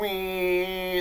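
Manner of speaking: imitated siren, wailed high.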